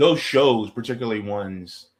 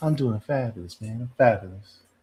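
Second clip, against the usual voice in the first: put-on quiet, soft-spoken, laid-back man's voice. Imitating a real chill man who never raises his voice: imitating a quiet, chill man. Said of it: "They don't talk very loud".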